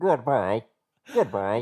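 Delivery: labored, struggling synthetic computer voice. Asked to do the Mac goodbye, the speaker does a struggling Mac robot voice. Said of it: "There's like one where the robot's kind of struggling".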